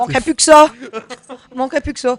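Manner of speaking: very loud, high, booming dad voice. Joking with friends, repeating a short line: imitating own father's voice. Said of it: "t'as pris la voix de, la voix de ton père".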